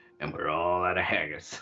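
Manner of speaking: put-on American accent. Reading out a message from Davin: put-on American voice. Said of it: "You've been practicing your American voice".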